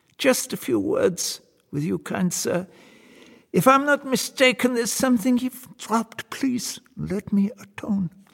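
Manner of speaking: piping, very high-pitched voice. Reading a story, the devil speaks to the soldier in a high-pitched voice. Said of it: "he calls out in a high-pitched voice".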